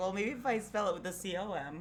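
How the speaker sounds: normal talking voice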